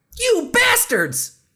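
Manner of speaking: heartfelt emotional outburst, very high pitched. Retaking a line after being asked for more emotion: with more emotion. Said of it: "Can we try that again with a little more emotion?".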